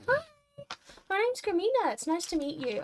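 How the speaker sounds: way-too-sweet, sugary voice. Greeting a gruff character in a scene: overly sweet greeting. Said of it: "way too fucking sweet".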